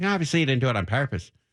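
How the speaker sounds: put-on Irish-accented voice. Retelling a childhood confession, quoting the priest: irish accent. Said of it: "an Irish accent".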